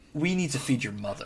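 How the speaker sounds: far too violent, aggressive, forceful tone. Retelling a film scene to co-hosts, mock-violent Nicolas Cage line. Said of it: "you're saying way more violent than he did".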